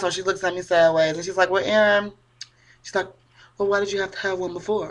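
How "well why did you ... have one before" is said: play-acted soft, patronizing, talking-down tone. Retelling a conversation, the speaker quotes a woman questioning her: mock-condescending tone. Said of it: "condescending and shit".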